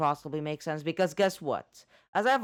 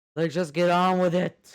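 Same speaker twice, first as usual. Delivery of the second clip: sounding bored, louder; 5 dB louder than usual. Asking the others how much can be skipped: bored tone of voice. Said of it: "the tone of my voice that I'm getting bored".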